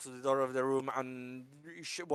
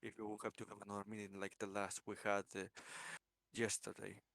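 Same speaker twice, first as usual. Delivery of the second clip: hushed, much quieter voice; 5 semitones lower, 14 dB quieter than usual. In an acted scene, a character speaks to another character: quiet voice. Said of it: "he says in a quiet voice right now".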